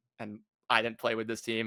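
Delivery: ordinary talk, nothing marked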